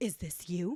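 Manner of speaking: concerned, worried voice. Retelling a coworker showing a phone in the hall: imitating a concerned coworker. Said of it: "his face is so concerned".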